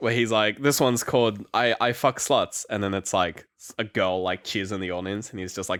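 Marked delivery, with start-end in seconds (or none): none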